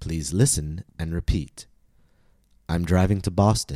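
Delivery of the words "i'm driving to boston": stress on the last word, "Boston". Listen-and-repeat lesson, all information new: stress on Boston. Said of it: "I stress the last content word".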